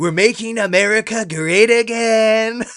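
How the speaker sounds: very slow loud high drawl. Imitating an answer to a reporter's question: imitating Donald Trump. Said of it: "he'll sit there and he'll be like".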